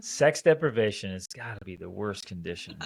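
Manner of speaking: normal talking voice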